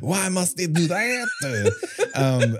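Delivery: poor put-on French accent. Imagining Truffaut's reaction to a Saw movie, bad Truffaut French accent. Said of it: "I don't think that's a real French accent".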